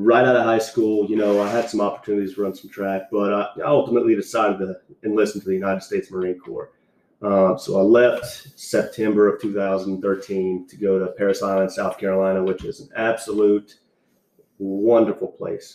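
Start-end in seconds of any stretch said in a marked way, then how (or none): 12.4-15.8 ironic, sarcastic tone meaning the opposite. Naming the training base to another speaker: sarcastic. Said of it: "That's a lie".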